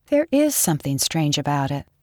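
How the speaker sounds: ordinary delivery, nothing marked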